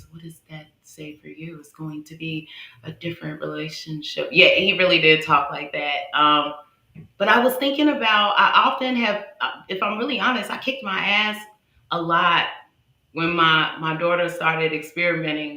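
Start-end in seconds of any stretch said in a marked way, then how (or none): 0.1-4.3 put-on calm voice, much quieter. Retelling how the listener answered worries about a son, imitating someone's calm voice. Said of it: "you came back with your calm voice".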